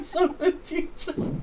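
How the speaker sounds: high, helpless laughing. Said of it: "I'm laughing so hard right now".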